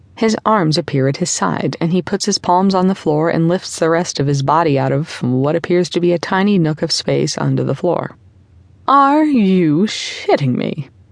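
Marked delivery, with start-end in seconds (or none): 8.9-10.9 slow, dripping sarcasm on every word. Linnea reacts as a man lifts himself out of a tiny nook under the floor; sarcastic. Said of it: "The sarcasm bleeds into Linnea's voice".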